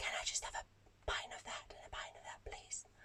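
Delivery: breathy whisper, barely voiced. Retelling placing a bar order during a gig, retelling a whispered order. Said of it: "I actually placed my order whispering".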